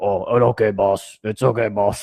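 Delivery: put-on strange French accent. Retelling how Andre the Giant called everybody boss: Andre the Giant voice. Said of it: "really weird French accent slash Gigantor language".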